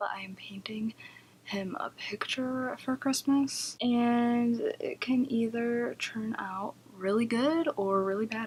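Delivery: soft-spoken, hushed, drawn-out voice. Talking about a painting while dad is upstairs: speaking quietly. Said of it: "I have to talk quietly because he's upstairs".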